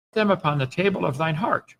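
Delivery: ordinary delivery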